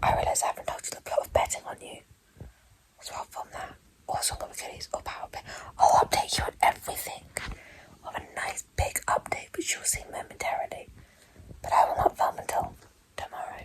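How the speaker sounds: speaking quietly. Updating viewers at night while others sleep nearby: speaking quietly. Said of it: "I'm being quiet because everyone else is asleep".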